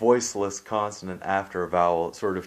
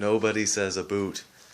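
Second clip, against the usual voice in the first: ordinary delivery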